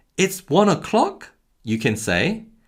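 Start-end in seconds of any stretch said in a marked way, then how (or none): 0.2-1.3 high, genuinely shocked, very surprised tone. Demonstrating an example sentence for learners: very surprised. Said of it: "in a very surprised tone".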